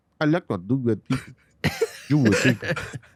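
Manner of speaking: fake, imitated Filipino accent. Showing friends how you do different accents, speak in an imitated Filipino accent. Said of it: "Filipino would be like".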